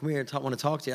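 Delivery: normal talking voice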